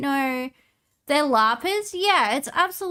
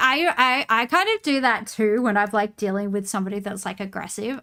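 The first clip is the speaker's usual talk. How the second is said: ordinary talk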